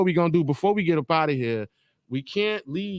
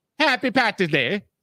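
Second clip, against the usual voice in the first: put-on Irish accent that lands on Jamaican; 4 semitones higher than usual. Wishing everyone a happy Saint Patrick's Day in a put-on accent that came out Jamaican. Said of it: "I think I'm doing the wrong accent".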